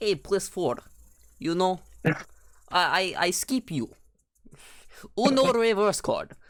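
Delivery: high-pitched, hammed-up, put-on Russian accent. Retelling how they talked in a Russian accent the entire time: put-on Russian accent. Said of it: "I was talking like this".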